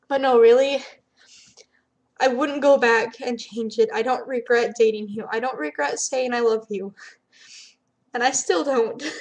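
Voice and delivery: loud, tearful speech through crying. Speaking on video to a former partner, crying while speaking. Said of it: "and I'm crying".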